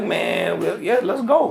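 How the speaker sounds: eager delivery.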